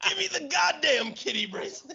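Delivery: put-on very high, shrieked scream. Retelling a scene where he smacks a robber's face, imitating screaming. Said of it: "he's just screaming at him".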